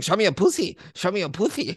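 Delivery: high, swooping mocking send-up voice. Describing how a man talks, doing a mocking imitation of his voice. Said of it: "du hörst es eigentlich schon fast in seiner Stimme".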